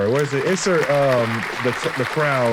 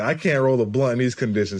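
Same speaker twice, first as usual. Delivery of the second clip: ordinary talk, nothing marked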